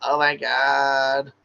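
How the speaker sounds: put-on Valley Girl voice. Showing listeners a voice they can use, Valley Girl accent. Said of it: "I like to use that Valley Girl accent".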